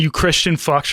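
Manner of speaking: usual speaking voice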